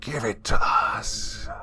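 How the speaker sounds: high, raspy hissing voice, very slow. A narrator reads a voice in the dark attic speaking to Ben: high, raspy hiss. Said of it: "a high, raspy voice hissed".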